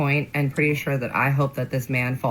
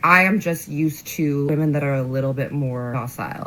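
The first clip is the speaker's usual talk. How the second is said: ordinary talk, nothing marked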